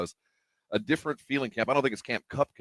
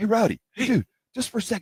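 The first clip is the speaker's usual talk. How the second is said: whisper with raised pitch; 12 semitones higher, 4 dB louder than usual. Retelling how a man called Rowdy over: imitating someone whispering. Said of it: "he's kinda whispering at him like he's a real dude".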